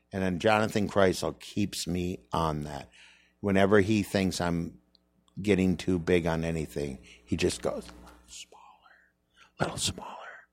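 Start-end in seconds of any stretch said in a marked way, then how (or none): 7.9-10.1 very quiet, gentle, sweet near-whisper. Speaker retelling how Jonathan Kreisel keeps him in check, imitating him saying it real low. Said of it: "He says it real low".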